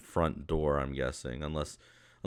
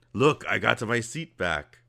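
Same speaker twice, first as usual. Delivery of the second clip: put-on character voice, louder; 6 semitones higher, 5 dB louder than usual. Voicing a character greeting the players: Deep Bellow character voice. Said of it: "when he sees you, he goes".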